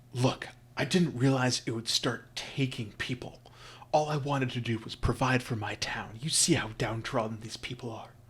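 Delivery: frightened, hushed, panicked, confiding half-whisper. Voicing a panicked merchant who leans in: half-whispering in panic. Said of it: "bringing this conversation down to, to a whisper".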